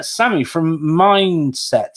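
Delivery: slight rural farmer accent, drawn-out long I. Introducing the next guest on the show, with a slight farmer accent. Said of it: "I've said it with a bit of a farmer accent then because I held the I a bit longer".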